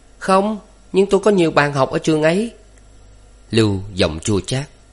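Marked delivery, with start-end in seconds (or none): 0.2-2.5 very high, easy laughing voice. Hiền, asked scornfully whether she is entering art school, answers with a smile. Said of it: "Hiền vẫn cười đáp".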